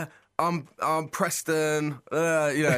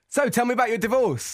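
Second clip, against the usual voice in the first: snappy, fast-paced, pitched-up radio-host announcer voice; 8 semitones higher, 3 dB louder than usual. Quoting how a guy asked a question, in a fast-paced radio voice. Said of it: "he was keeping it really fast paced, and he had a real radio voice ... like that".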